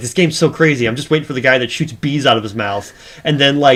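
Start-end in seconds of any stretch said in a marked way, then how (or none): none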